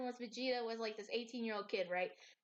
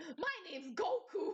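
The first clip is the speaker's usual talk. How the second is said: high-pitched, put-on New York accent; 5 semitones higher than usual. Imagining a Dragon Ball reboot, a speaker voices Goku with a New York accent. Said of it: "give Goku a fucking New York accent".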